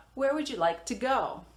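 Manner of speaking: pitch comes down, dropping on "go". Demonstrating a WH question in an English lesson, with falling intonation. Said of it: "All of these have a falling intonation".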